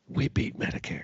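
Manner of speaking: hushed, breathy, soft whisper. Mocking a politician's speeches: whispering Joe Biden impression. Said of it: "Joe Biden just whispers for no fucking reason".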